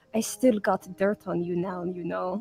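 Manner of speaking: low, quiet murmur. Leaning in toward another character before he walks off, murmuring. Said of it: "leaning in to murmur and say".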